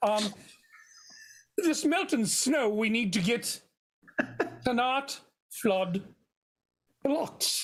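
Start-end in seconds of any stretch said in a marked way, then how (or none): 1.6-7.6 put-on Scottish accent. Playing a role in an acted scene about melting snow: Scottish accent. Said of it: "I'm having quite a time with my Scottish accent".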